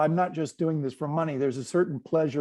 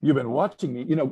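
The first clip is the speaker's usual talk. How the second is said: put-on accusatory tone; 4 dB louder than usual. Retelling his reply to a man who said he'd been watching, mock-accusatory. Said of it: "sort of accusatorily".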